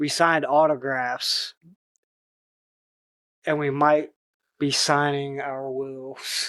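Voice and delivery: low, grave, dead-serious, dramatic delivery. Reading Lucky Day's trailer line: low and serious Lucky Day voice. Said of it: "this is low and serious".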